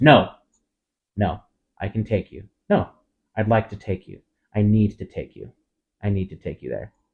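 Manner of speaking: mock-snapping, sharp snappish tone. Retelling a driver insisting on taking a passenger who wants out: retelling a snap. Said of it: "And Trish snaps".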